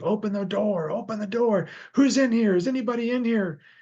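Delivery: very high, acted, crazed wild yelling. Retelling a man outside a house demanding to be let in, retelling a man yelling. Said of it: "he's yelling to say".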